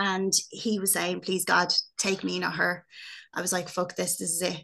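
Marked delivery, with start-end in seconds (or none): 1.2-2.8 put-on tearful, crying whisper. Recounting waking to hear a crying father pray, retelling dad's tearful whisper. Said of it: "hearing him whispering".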